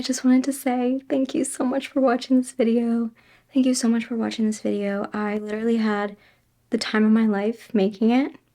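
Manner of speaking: soft whisper. Thanking viewers at one in the morning at the end of a sewing video, whispering. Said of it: "I'm whispering because now it's like one in the morning".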